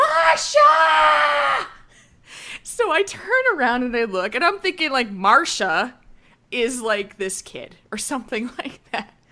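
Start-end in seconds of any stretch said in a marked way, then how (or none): 0.0-1.7 put-on old woman's very high, loud, shrill shout. Retelling being blocked at a train doorway, the speaker imitates an old woman yelling. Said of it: "She yells this 7 times".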